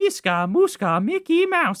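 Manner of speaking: squeaky, high-pitched and slow. Admitting he used to do it better, the speaker tries a Mickey Mouse voice. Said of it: "I was much better at doing the Mickey Mouse impression".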